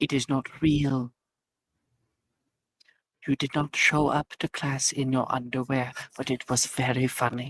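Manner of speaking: eerie whispering voice. Telling another speaker a dream was not real: creepy whisper. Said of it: "He's just whispering".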